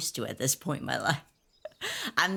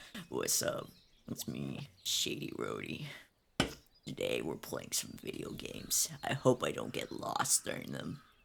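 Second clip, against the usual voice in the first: deepest possible voice, very deep, breathy and hushed; 14 semitones lower, 9 dB quieter than usual. Retelling joining Shady's stream and hearing the new voice; imitating Shady's very deep voice. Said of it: "with the most deepest".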